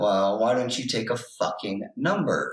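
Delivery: muttering under the breath. Retelling a remark made to a judge in court: retelling a muttered remark. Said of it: "Under my breath".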